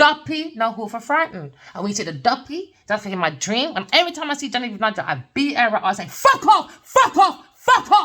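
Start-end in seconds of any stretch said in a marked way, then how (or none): 6.1-8.1 full-throated, very high, loud, drawn-out shout. Recounting telling someone off in a dream, retelling a shout. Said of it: "don't be afraid to shout".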